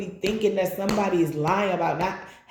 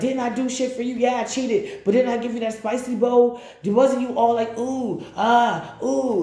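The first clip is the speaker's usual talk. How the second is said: mock scolding tone, higher pitch; 5 semitones higher than usual. Acting out a partner scolding you: imitating a scolding partner. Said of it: "they'll scold you about it".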